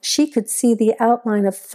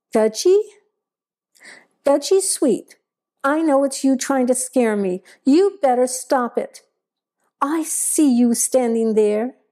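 accusing, finger-pointing calling out; 4 semitones higher than usual. Straining to see into the darkening woods, she calls out to gudgy sweet, accusing. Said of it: "she called out in an accusing voice".

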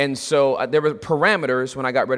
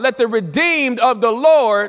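very loud, very high-pitched, full-throated calling out; 9 semitones higher, 5 dB louder than usual. Repeating a verse one more time to the listeners: real loud. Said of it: "real loud".

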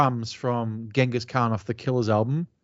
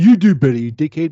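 very loud, jeering heckling voice; 4 semitones higher, 10 dB louder than usual. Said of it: "That was a good impression of a Maiden fan".

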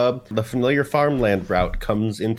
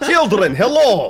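stray put-on Russian accent, very high and loud; 11 semitones higher, 6 dB louder than usual. Trying a Scottish character's accent to greet children, slipping into an accidental Russian accent. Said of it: "Still Russian".

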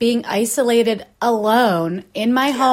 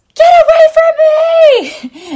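very loud, very high, shrill, drawn-out panicked scream; 10 dB louder than usual. Retelling running from joggers without masks: retelling a scream. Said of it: "I freak out and I scream".

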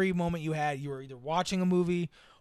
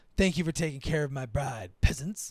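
charismatic prince voice, lower; 3 semitones lower than usual. Quoting royalty talking to the peasants, in a charismatic prince voice. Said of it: "like a charismatic like prince way".

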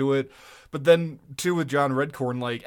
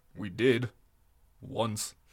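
deadpan, dry and flat, lower and quieter; 6 semitones lower, 6 dB quieter than usual. Answering another speaker's very important question, deadpan. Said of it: "That is a hell of a deadpan".

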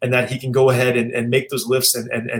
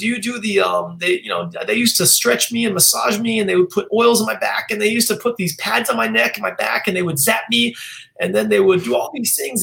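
put-on pitched-up elderly woman voice with accent; 14 semitones higher than usual.

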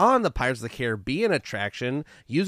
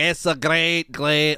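bad attempted Scottish accent, louder; 2 semitones higher, 4 dB louder than usual. Showing the accent just tried, then giving up: attempted scottish accent. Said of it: "I was trying to do, like, a Scottish".

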